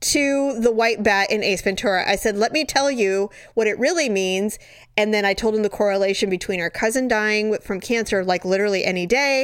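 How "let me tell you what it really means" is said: ordinary talk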